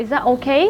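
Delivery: ordinary delivery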